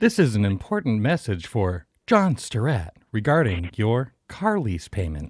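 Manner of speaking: canned, swooping automated robocall voice. Answering another speaker's greeting on a call: imitating a computer voice. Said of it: "a really good computer voice there".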